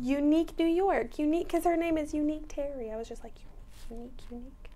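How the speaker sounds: hushed and secretive, quiet as a library.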